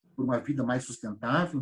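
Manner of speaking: normal talking voice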